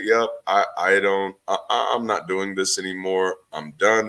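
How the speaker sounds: usual speaking voice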